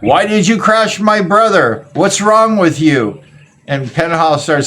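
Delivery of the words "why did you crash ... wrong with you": angry, high-pitched screaming tirade. Retelling how the speaker's sister screamed at a rider after a crash, imitating someone screaming. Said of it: "was screaming at him".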